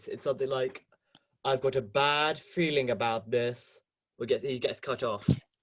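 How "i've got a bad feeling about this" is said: slow, put-on robot droid voice. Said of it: "I can remember K two's voice".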